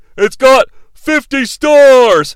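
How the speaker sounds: loud blustering speech. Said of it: "He's like".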